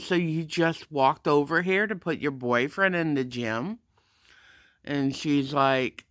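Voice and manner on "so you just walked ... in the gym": ordinary talk, nothing marked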